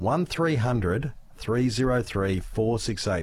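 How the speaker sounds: deliberately slow. Host giving listeners the call-in number a second time, said slowly. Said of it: "I'll say that slowly".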